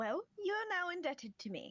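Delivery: chipper, very high, jumping up an octave. Voicing Yanrin after being cool and tough: Yanrin voice up an octave. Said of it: "now Yanrin's voice has gone up a, an octave".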